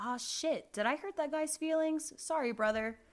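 put-on loud, high-pitched hollered yell. Reading a story where the stranger yells after the departing narrator: yelling. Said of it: "heard that same voice yell".

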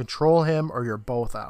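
ordinary delivery

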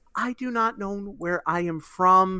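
put-on timid, shy, very nervous anime girl voice. Imitating how a former schoolmate who became a voice actor talked: imitating a nervous anime girl. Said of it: "also talked like that sort of girl".

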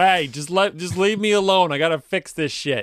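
put-on New York accent. Riffing on a scene, voicing Alfred's reply, Alfred with New York accent. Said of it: "they just go straight like New Yorker".

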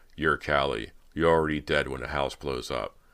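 ordinary delivery

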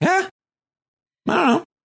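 high, vague, unsure, noncommittal tone.

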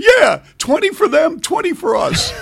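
excited, very high-pitched squealing. Telling a story about a coach answering Bernard, do Coach Ray's excited, high-pitched voice. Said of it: "his voice went always pitched high".

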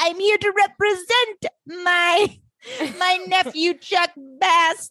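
pitched way up and stretched.

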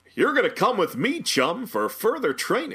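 very high character voice with swinging, swooping pitch. Demonstrate Peter Serafinowicz's voice from the show, in The Tick voice. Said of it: "Doing his Tick voice".

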